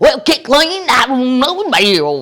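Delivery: very loud, high, put-on Southern hillbilly accent. Retelling what he says when asked to do an accent: put-on hillbilly accent. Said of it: "hillbilly accent, or or Southern accent, or redneck".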